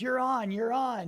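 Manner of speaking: play-acted high, thrilled call bursting with excitement. Retelling being called up as a standby: imitating an excited call. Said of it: "He's so excited".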